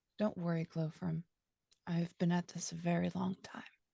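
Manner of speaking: quiet, hushed, soft voice. Reassuring a companion in character: quiet voice. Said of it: "I say quietly".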